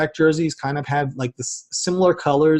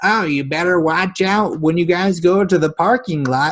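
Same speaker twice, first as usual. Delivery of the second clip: put-on raspy elderly woman's voice; 3 semitones higher, 3 dB louder than usual. Speaker retells an old lady Jets fan's warning after the game, raspy voice. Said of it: "in her like raspy voice".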